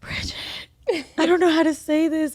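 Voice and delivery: mock crying, tearful voice. Retelling calling a sister with pregnancy news: retelling own crying. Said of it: "and I'm crying".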